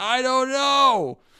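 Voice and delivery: sudden, very loud, high, shrill yell. Retelling how a character answers an inspirational speech: imitating a loud yell. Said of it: "really loudly yells".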